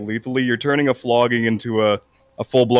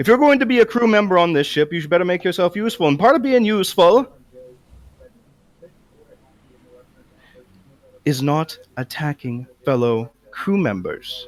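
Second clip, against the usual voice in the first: put-on Irish accent, higher pitch; 6 semitones higher than usual. Speaking in character to a crew member on the ship: Irish accent. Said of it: "not suck at doing an Irish accent".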